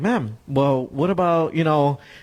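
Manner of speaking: put-on cool, calm, sarcastic tone. Retelling own past reply to an angry caller: imitating own cool snarky reply. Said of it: "keeping cool, but being snarky about it".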